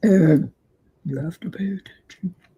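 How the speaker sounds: calm, patient delivery. Retelling what a father used to say: imitating father's deep voice. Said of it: "He had a deep voice".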